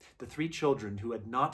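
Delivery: ordinary delivery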